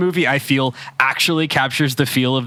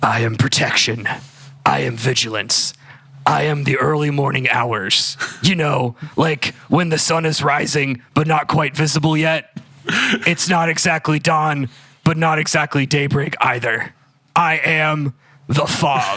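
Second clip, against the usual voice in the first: hoarse, rasping, put-on superhero voice. Narrating a scene of a figure watching the city, the speaker uses a raspy voice. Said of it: "I gotta get my, my raspy voice".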